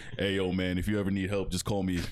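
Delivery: put-on deep male voice. Retelling what a big man at the gym said: imitating a deep voice. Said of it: "deep ass voice too".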